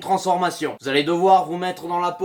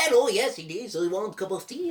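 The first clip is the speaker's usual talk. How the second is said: put-on Mexican accent; 2 semitones higher, 5 dB quieter than usual. Showing another voice option for the imitation: Mexican customs officer voice. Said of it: "la voix du douanier, euh, Mexique".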